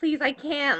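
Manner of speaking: desperate, pleading, begging tone. Retelling how she begged the lady for an appointment; retelling begging. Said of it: "so I'm like begging her".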